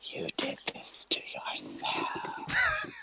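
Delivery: soft, close whisper. A magic mouth on a gun stuck in Raali's back, whispering. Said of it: "it's whispering at him".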